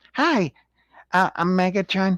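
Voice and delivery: high put-on character voice. Mocking how an actor voiced Megatron: SpongeBob voice. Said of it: "That's my SpongeBob voice".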